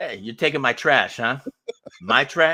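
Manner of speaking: loud put-on Italian American accent, bantering. Voicing a New York rat guarding trash: put-on Italian American accent. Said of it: "no offense to any Italian Americans".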